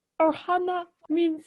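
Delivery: put-on alien voice. Doing the Stitch voice for an episode promo, with a posh British accent. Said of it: "Why does your Stitch have a British accent?".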